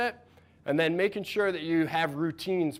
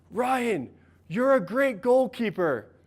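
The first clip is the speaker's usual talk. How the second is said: acted, encouraging coach's yell, high and drawn out; 6 semitones higher, 3 dB louder than usual. Retelling a coach's call after letting in a goal: imitating coach yelling. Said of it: "my coach yells out".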